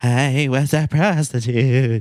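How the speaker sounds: drifting, slow wavy voice. Describing a woman who sounds like she's on benzos: imitating her wavy voice. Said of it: "her voice is very like wavy".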